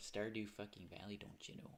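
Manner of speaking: put-on Midwestern American accent. Streamer announcing the game for today's stream, Midwest accent. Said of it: "I've just kind of done like that Midwest accent for it".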